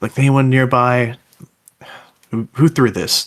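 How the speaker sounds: cautious, wary, tentative calling tone. A role-playing game player speaks in character, in a quieter voice. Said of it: "kind of a quieter voice actually".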